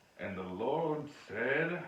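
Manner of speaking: seductive, sexy, come-hither voice. Showing how the text has to be read, in a sexy voice. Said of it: "you just have to read it in a sexy voice".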